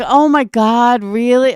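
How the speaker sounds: over-the-top, drawn-out, exaggerated fake surprise. Mocking another woman's reaction, imitating exaggerated fake surprise. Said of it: "You now you're acting surprised?".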